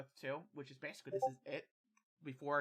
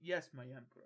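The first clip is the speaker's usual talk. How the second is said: very confident, self-assured tone. Telling a story, a character answering the emperor: very confident voice. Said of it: "he speaks up in a very confident voice".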